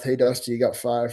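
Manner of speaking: quiet, low mutter under the breath. Recalling a warning about fouls, imitating Tim Country muttering under his breath. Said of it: "just under his breath".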